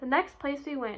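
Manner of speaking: plain reading voice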